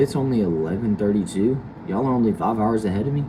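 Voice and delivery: ordinary talk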